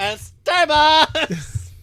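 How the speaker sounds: put-on valley girl voice. Doing a voice character, a stereotypical Valley girl: Sally Falsax, Valley girl voice. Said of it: "Your stereotypical Valley girl".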